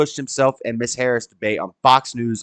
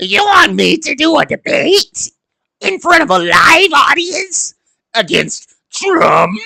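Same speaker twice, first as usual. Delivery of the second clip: very high, loud, shrill, scary put-on witch voice; 14 semitones higher, 5 dB louder than usual. Doing Kamala about a live debate against Trump, Kamala voice as scary witch. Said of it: "It's just basically a scary witch voice".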